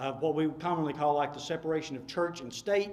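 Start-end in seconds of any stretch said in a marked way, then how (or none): none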